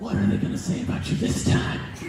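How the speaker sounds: low, breathy whisper.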